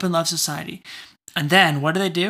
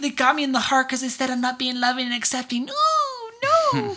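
high, sing-song, girlish put-on voice; 8 semitones higher than usual. Retelling being told they're not loving and accepting, sounding like a girl. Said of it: "that sounded like a girl".

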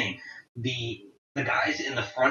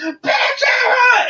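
acted scream, much higher, louder; 10 dB louder than usual. Speaker recounts a man who grabbed them in a crowd, retelling a scream. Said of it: "he just screams".

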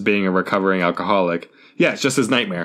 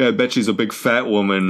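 plain

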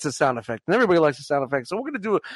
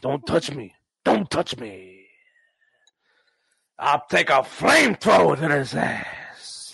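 put-on gruff movie-star voice; 3 semitones lower than usual. Doing an impression for another speaker: Al Pacino voice. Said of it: "It's my Al Pacino".

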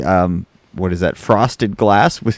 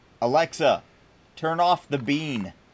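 high, slow, deliberate, called-out delivery; 6 semitones higher, 8 dB quieter than usual. Calling out a command to a smart speaker: yelling at a voice assistant. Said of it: "I'm gonna yell, just a heads up".

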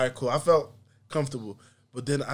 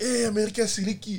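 high, fed-up, exasperated angry outburst; 7 semitones higher than usual. Retelling waiting for a slow visa, imitating himself getting mad. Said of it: "so I'm getting mad".

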